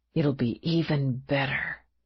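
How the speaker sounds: soft, gentle whisper. Reading a novel aloud, a man reassuring his lover: whispered promise. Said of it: "he promised in a whisper".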